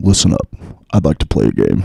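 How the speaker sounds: very low, very loud, exaggerated booming put-on bass. Joking with another speaker about playing a game: very deep put-on voice. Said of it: "it's really deep, though, when I do it like this".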